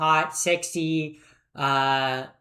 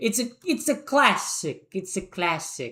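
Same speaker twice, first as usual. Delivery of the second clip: Italian-accented, put-on delivery; 3 semitones higher than usual. Ranking films aloud, slipping into a put-on italian accent. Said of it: "I don't know why I'm doing an Italian accent".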